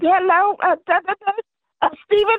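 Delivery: really high, thin-pitched put-on voice. Imitating a lady's greeting from the interview: real high voice. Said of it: "She got that real high voice".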